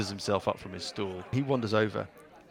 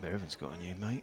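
muttered under breath, much quieter and lower; 3 semitones lower, 11 dB quieter than usual. At a bar, one man mutters about another's new companion, under his breath. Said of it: "you can hear him under his breath go".

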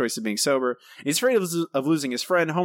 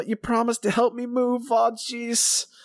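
deliberately bad, very high-pitched, squeaky voice; 9 semitones higher than usual. Reading out a listener's favorite movie quote: bad John Travolta impression. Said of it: "in my bad Travolta impression, much like I just did".

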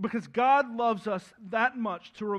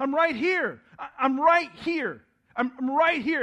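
loud calling out, repeated; 4 semitones higher, 4 dB louder than usual. Acting out the Spirit answering in a Marco Polo game, crying out. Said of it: "the Spirit that's just crying out".

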